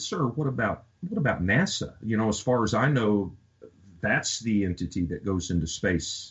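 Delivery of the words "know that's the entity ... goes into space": ordinary talk, nothing marked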